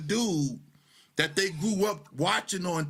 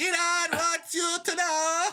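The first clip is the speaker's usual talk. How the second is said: put-on Arabic accent, much higher; 11 semitones higher than usual. Describing his news videos, the speaker repeats his catchphrase in an Arabic accent. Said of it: "It's my Arabic accent to how some Arabs".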